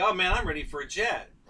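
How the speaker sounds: mock cocky, boastful, bragging tone. A flight instructor retells his student's boast after a few flights, imitating cocky bragging. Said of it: "He's like".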